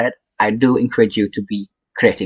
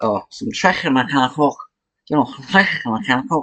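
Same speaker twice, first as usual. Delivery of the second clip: put-on Glaswegian Glasgow accent; 2 semitones higher, 4 dB quieter than usual. Trying out accents for fun, picking one from Glasgow: put-on Glasgow accent. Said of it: "let's see what from Glasgow".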